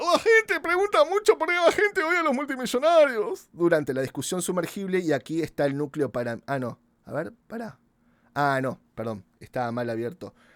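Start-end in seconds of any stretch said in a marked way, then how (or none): 0.0-3.5 very high, loud, dim-witted dopey voice. Speaker announces he will do a stupid person's voice: stupid person's voice. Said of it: "voy a hacer la voz de un estúpido".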